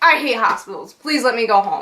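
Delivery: ordinary delivery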